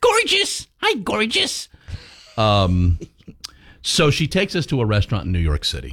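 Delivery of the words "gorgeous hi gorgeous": put-on, big squeaky voice, much higher pitched. Retelling how a high-maintenance woman greeted the speaker, big squeaky voice. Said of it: "Got a big squeaky voice".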